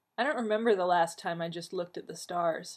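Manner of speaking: ordinary delivery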